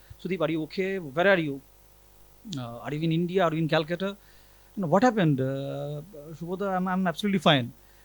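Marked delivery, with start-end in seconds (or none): none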